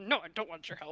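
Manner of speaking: muttered, hushed half-whisper, barely audible. Retelling what a woman half-whispered under her breath as she walked past: half-whispering under her breath. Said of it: "whisper under her breath".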